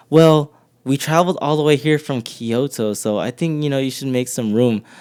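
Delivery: normal talking voice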